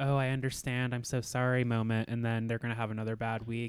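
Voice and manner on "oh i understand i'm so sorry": mock, fake, insincere tone. Predicting a contestant's coming apology: mock fake apology. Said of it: "We might get a pretend".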